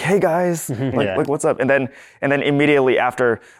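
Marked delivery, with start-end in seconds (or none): 0.0-1.6 hyped, peppy, high-energy voice, pitched up. Retelling how they started filming: retelling own high-energy intro. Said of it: "I had to start out with that high energy".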